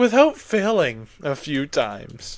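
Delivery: downcast, gloomy. Complaining about failing repeatedly, noticing they sound sad, sad and depressed. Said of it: "I sound so depressed now. I'm like".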